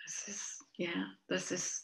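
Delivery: soft, unvoiced, very quiet whisper. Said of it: "I want to talk really quietly".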